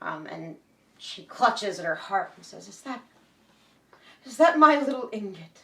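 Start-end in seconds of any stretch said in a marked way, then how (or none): 2.7-5.6 put-on high, raised elderly woman voice. Game master voicing the player's long-unseen mother clutching her heart: elderly mother character voice. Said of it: "and what you see is your mother, but many, many years on her since the last time you saw her. / and what you see is your mother, / but many, many years on her since the last time you saw her. / and wh".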